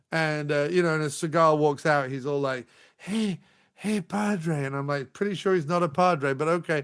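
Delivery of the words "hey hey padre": put-on Cajun-like accent, pitched higher. Retelling a film scene, imitating Steven Seagal. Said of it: "why is he talking like that?".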